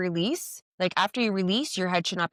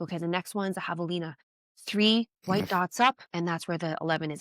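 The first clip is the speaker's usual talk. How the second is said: mimicked mumble, muttered under the breath. Speaker acts out what a man muttered, imitating mumbling under breath.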